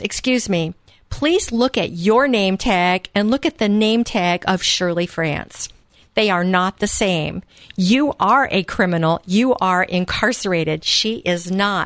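ordinary talk, nothing marked

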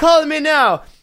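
high, loud Jamaican accent with sales-pitch delivery.

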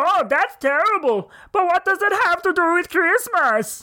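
put-on high, slow, terrible German accent. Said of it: "that is terrible German accent".

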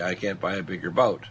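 put-on muttered under-breath remark. Acting out what a vascular surgeon would say, retelling a muttered aside. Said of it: "it's under his breath".

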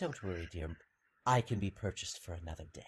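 sultry, seductive, very soft, low and hushed. Narrating a story, voicing a character leaning in close to the listener, sultry. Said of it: "She leans into you with a very sultry little grin".

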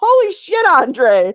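very high-pitched, shrill, excited shrieking yell. Recalling something happening right in front of them, the speaker re-enacts: retelling a yell. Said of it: "I literally yelled".

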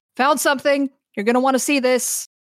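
calling out loudly, unstrained voice. Voicing a sergeant calling from the end of the tunnel: Sergeant McCoy yelling. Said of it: "you hear Sergeant McCoy yelling".

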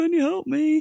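high, slow, helpless voice. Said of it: "he goes and knocks on the door and he's like".

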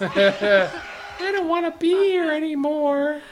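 put-on child's whine, very high, very loud, slow, drawn out. Imitating a whiny kid from another episode: Stanlin whiny kid voice. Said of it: "the whiny kid from the other episode".

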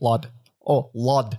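awful attempted British accent, sounding Scottish. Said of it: "I sounded more Scottish".

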